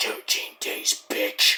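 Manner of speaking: close, hushed, soft, breathy whisper. Retelling how MJF goes up to Kenny: imitating MJF whispering. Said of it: "goes up to Kenny and whispers".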